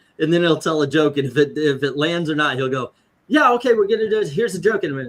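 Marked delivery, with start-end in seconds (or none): 3.3-5.1 fast, confident, pitched-up patter rattled off. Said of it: "He's like".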